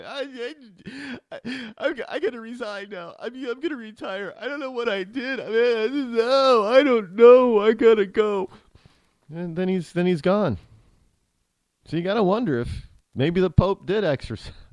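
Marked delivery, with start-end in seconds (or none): 0.0-8.5 mock high, slow, teary-eyed weepy blubbering. Retelling Boehner resigning after the Pope leaves town: imitating Boehner teary-eyed crying. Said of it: "now he's really teary-eyed crying".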